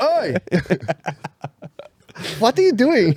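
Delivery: put-on Swedish accent, high bouncing sing-song tune. Joking about a Swedish guy grabbing someone, in a put-on Swedish accent. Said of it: "Some Swedish guy's gonna fucking grab you".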